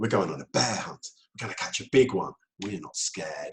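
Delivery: full-on animated storybook reading, dropped low. Showing how to read a children's book aloud to build storytelling, really going into the story. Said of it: "really go into it".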